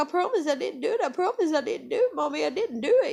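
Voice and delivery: put-on crying little girl, high, tearful voice. Retelling a daughter's plea during the confrontation: imitating a crying child. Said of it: "she's crying".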